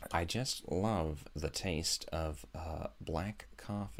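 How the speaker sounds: very quiet, very slow, drawn-out, deliberate delivery. Talking about favourite coffee, doing a David Lynch impression. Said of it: "That's my David Lynch impression".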